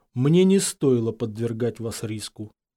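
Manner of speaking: usual speaking voice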